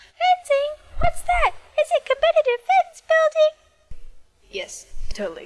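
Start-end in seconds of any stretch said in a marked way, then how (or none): 0.1-4.0 very high, mocking put-on voice, drawn out. Retelling how people react on hearing about fencing, in a mocking high-pitched voice. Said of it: "*in high-pitched voice*".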